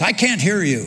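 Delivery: gruff voice cutting in abruptly. Retelling an anecdote about a praying chaplain: gruff voice as Lyndon Johnson. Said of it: "in kind of a gruff voice".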